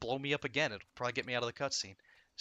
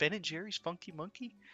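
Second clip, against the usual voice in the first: the sweetest high little voice; 6 semitones higher than usual. Retelling how a voice actress read a chat line: imitating a very sweet voice. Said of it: "and she has the sweetest voice".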